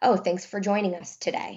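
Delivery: normal talking voice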